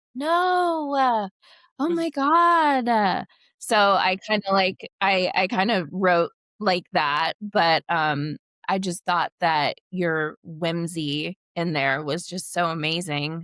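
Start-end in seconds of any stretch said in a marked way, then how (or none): 0.1-3.2 put-on very high Valley Girl accent, drawn-out "no". Showing how the valley girl accent sounds: valley girl accent. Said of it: "sometimes I have that Valley Girl accent".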